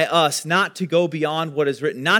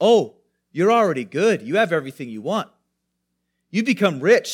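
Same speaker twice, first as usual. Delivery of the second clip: sarcastic praise laid on, put-on. Paraphrasing a scripture passage in his own words: imitating sarcastic praise. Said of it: "I think it is sarcasm".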